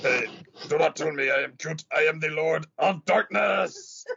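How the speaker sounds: tiny, dark, evil creature voice. Wondering aloud what a mini Cthulhu sounds like, mini Cthulhu voice. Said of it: "what does a mini Cthulhu sound like".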